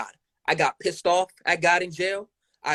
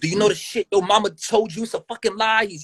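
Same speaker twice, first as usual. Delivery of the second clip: put-on angry yelling while crying through tears; 4 semitones higher than usual. Retelling his dad's reaction when confronted about not being there: imitating dad yelling while crying. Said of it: "He's yelling at me, but he's crying".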